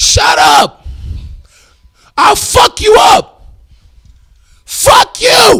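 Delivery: hoarse yell forced out, very loud and high. Sleepy, with their voice gone, showing what it sounds like trying to yell, hoarse. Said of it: "My voice is gone. You want to hear me try to yell?".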